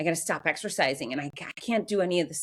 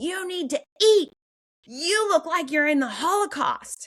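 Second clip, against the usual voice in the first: acted shrill motherly yell, high, loud and scolding; 11 semitones higher, 5 dB louder than usual. Retelling what the mother said on coming in: imitating her mother yelling. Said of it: "she started yelling".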